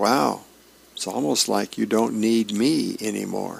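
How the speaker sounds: plain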